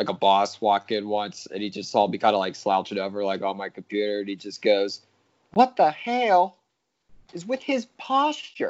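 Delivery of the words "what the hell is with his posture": very high-pitched, slow, heavy southern drawl. Retelling what a boss said on seeing someone slouch at a computer: thick southern accent. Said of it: "In like a thick southern accent".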